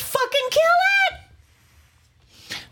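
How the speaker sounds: acted, very high, shrill, frantic panicked yell. Retelling finding a spider in the shower: retelling own panicked yelling. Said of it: "I was flipping the fuck out".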